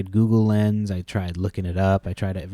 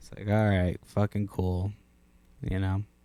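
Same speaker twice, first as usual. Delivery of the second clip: plain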